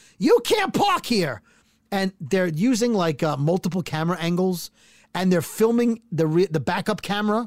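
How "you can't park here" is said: play-acted, very high, screamed shriek. Retelling an old lady in a video screaming at two guys: imitating someone screaming. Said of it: "she's screaming at them".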